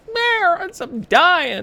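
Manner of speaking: very high, loud, drawn-out crying cat wail. Retelling the cat crying in the basement: imitating the crying cat. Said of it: "He's like".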